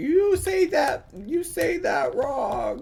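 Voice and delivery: very high, slow mock yell. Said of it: "yell at me and be like".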